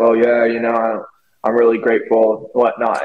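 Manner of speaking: impression of a tired man's voice. Retell what you heard a tired man on a plane say, in a Pete Davidson voice. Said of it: "he had his Pete Davidson voice".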